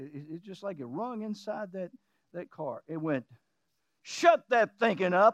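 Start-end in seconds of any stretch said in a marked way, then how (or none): 4.0-5.3 put-on, very authoritative commanding voice. Retelling a voice that spoke up while driving: imitating an authoritative voice. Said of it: "very authoritative voice".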